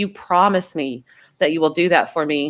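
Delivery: put-on tearful voice, acted crying while speaking. Recalling making a best friend promise on the phone, retelling a tearful plea. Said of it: "we were both crying on the phone".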